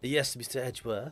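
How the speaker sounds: put-on French-accented judge voice. Voicing Judge Gavelle answering Mister Edgeworth: Frenchy accent for Judge Gavelle. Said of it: "we were trying to go for a sort of Frenchy accent".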